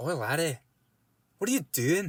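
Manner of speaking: put-on Scottish accent. Retelling a friend's game character's line, in Scrimduffle's Scottish accent. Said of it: "Scottish accent is so fun".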